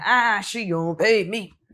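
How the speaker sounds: put-on big, angry, mad voice. Imitating the other speaker's complaint: imitating a big, mad voice. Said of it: "You sound real big and mad".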